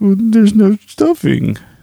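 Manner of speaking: very high, slow, stretched-out delivery. Joking about a Thanksgiving episode with no stuffing: David Schwimmer impression. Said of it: "Is that your David Schwimmer impression?".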